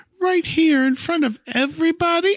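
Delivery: very high, squeaky falsetto. Narrating a story, voicing Peter as he plays the bride, in falsetto. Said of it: "Peter says in falsetto".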